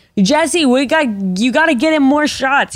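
acted drunk voice, words slurred and smeared together. Retelling what Landon said at the end of the night: imitating Landon slurring drunk. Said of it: "he's getting too drunk, so he's slurring his words".

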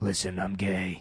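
low, breathy impression. Joking about Kiefer with others, do a breathy Jack Bauer voice. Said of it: "He's got a real breathy voice".

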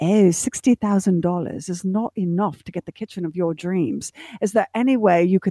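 speaking in a British voice. Retelling what Hillary says to a couple, in her British voice. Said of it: "hillary says in her british voice".

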